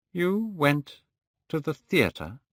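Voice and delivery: very slow, deliberate delivery. Narrator reading Hallward's reply to Dorian Gray, speaking very slowly. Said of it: "speaking very slowly".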